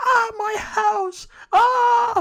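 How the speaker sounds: very shrill, very high, long stretched-out scream. Retelling a movie scene where the daughter screams in the road: imitating someone screaming. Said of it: "screaming in the middle of the road".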